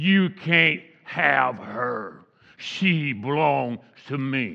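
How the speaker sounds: deep, low man's voice. Retelling what a voice coming out of a lady said, deep man's voice. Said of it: "like a man's voice, a deep voice".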